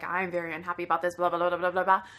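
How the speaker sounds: put-on stern old woman's grumbling mutter under breath. Retelling an upset traveller's complaint at a delayed flight: imitating an old woman's severe muttering. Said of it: "in that old woman's severe tone".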